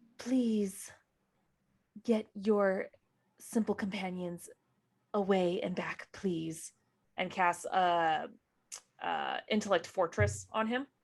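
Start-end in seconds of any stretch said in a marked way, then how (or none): 0.2-6.7 whispered pleading in put-on voice. Voicing a character who clasps a companion's shoulder: whispering in character. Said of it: "gonna whisper to him".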